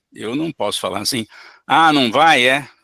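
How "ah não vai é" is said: loud, harsh, angry sarcastic outburst. Showing how not to speak to an aggressive spirit: loud, angry and ironic. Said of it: "Estou falando alto, bravo e com ironia".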